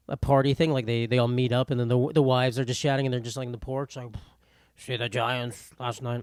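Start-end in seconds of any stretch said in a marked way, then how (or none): 4.7-6.2 slow, put-on old man voice. Acting out people chatting on a porch at a party: put-on old man voice. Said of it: "I keep making this old man voice".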